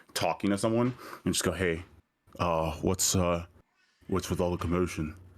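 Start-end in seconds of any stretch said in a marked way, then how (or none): 1.5-5.1 hushed, acted whisper. Playing a character who asks a stranger about the commotion: whispering in character. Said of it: "lean in and whisper to the first person".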